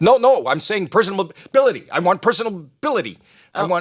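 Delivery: mock freaked-out, high, flustered insistent delivery. Retelling how the manager answered the question: imitating someone freaked out. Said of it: "She's freaked".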